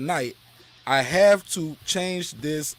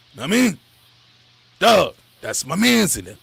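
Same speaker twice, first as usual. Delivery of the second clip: put-on hoarse voice, louder; 2 semitones higher, 6 dB louder than usual. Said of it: "trying to talk like this".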